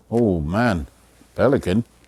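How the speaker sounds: plain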